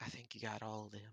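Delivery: muted, low-key, hushed, quiet voice. Game master voicing one of the group answering the players, hushed tone. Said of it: "says in a hushed tone".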